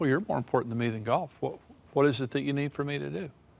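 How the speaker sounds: gentle, kindly, considerate tone. Showing how tone changes a request about golf: gentle, kind tone. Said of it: "My tone is kind".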